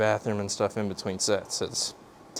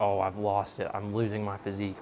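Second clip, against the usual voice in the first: ordinary delivery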